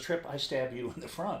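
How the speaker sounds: plain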